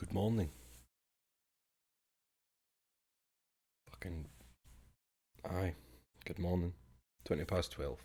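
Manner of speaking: tired voice, sounding sleep-deprived. Greeting viewers after sleeping half an hour: tired voice after no sleep. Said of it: "you can hear it in my voice".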